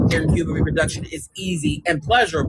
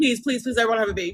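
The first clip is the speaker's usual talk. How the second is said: pretend pleading tone, higher; 5 semitones higher, 3 dB quieter than usual. Mocking the claim that women beg men: mock begging. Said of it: "women are begging men".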